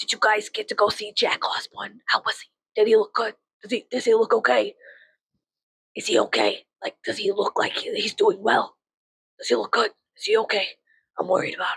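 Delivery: heavy, thick put-on New York accent. Retelling a talk with a man worried about Jack Osborne, a speaker imitates his thick New York accent. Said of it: "I'm gonna try to do his accent".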